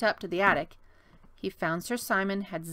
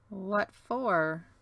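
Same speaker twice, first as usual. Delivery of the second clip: suspicious tone. William responds to a request by asking suspiciously. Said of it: "William asked suspiciously".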